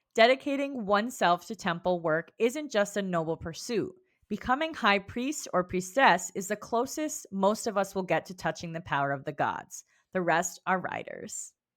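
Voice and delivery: ordinary delivery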